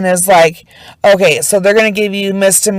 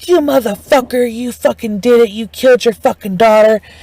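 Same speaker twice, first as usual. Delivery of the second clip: savage, vicious, accusing yelling; 3 semitones higher than usual. Retelling how people yelled at a man in a small room, retelling vicious yelling. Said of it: "they're like yelling at him".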